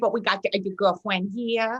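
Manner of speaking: put-on baby voice. Showing the others the voice a mother made up: imitating mom's baby voice. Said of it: "it was just a baby voice".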